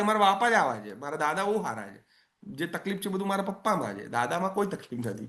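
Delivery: ordinary talk, nothing marked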